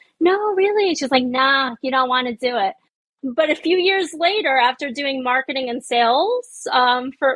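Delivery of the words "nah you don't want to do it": heavy put-on New York accent. Retelling a woman's reply, in the thickest New York accent. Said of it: "like the thickest New York accent ever".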